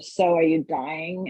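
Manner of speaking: put-on snide bitchy voice. Retelling a TV scene, quoting Serena asking June: imitating Serena's bitchy voice. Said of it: "her fucking bitchy ass voice".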